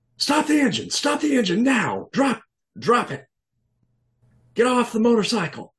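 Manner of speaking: loud, shrill, very high screaming. Plain-clothes cops confront a motorcyclist doing donuts in the street, screaming orders. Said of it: "And they're screaming at you".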